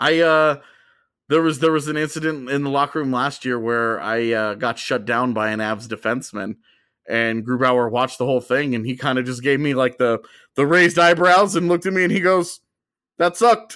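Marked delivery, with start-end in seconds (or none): 13.2-13.8 put-on deep, loud, flat German-accented voice, also high. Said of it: "deep Grubauer voice with the accent".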